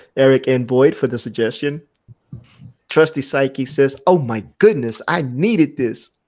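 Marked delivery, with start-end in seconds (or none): none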